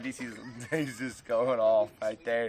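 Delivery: slow talk, crying with laughter. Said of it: "Sorry, I'm crying".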